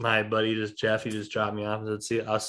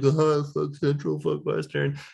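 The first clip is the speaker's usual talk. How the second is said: pitched-up, mocking, sarcastic jeering tone; 5 semitones higher than usual. Retelling joking rivalry talk with a friend: imitating sarcastic taunting.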